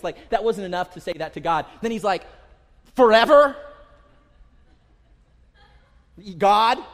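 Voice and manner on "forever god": put-on very loud sarcasm, pitched up. Acting out David questioning God: imitating David's sarcasm. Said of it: "the sarcasm in his voice".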